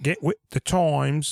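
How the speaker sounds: mock obnoxious British accent. Retelling how a film character talks, imitating an obnoxious british accent. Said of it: "doing that obnoxious accent".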